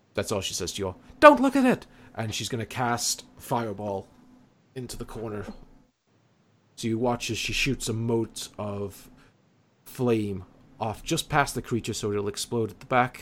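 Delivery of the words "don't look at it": very high, shrill, loud shouting. Voicing a character warning the others not to look: shouting a warning. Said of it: "she shouts to the rest of you".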